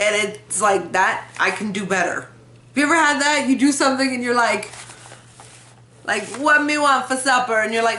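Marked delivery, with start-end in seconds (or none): 6.4-7.6 weak put-on Jamaican accent, much higher pitch. Describing trying an accent and falling short, weak Jamaican accent. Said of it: "your Jamaican accent is so funny".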